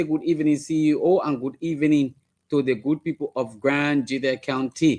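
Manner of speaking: normal talking voice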